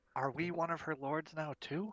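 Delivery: whispered words. Voicing a character who whispers a question to a companion: whispering in character. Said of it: "whispers to Morty".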